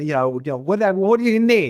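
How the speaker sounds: put-on New York accent. Speaker retells what an equipment supplier would ask, in a New York accent. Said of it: "typical New Yorker with the accent".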